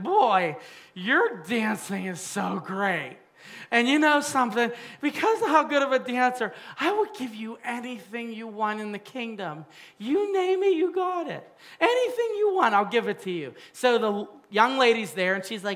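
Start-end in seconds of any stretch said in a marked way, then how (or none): 0.0-13.5 put-on drunk voice. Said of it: "He's drunk".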